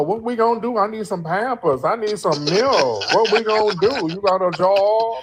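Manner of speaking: put-on demanding, complaining voice. Mocking the other speaker's question by imitating a baby mama. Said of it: "You sound like somebody's baby mama".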